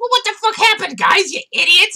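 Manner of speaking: very high, very loud, shrill goblin shriek. Voicing a goblin who finds his men beaten: voicing an angry goblin. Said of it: "there is a goblin brandishing a wand".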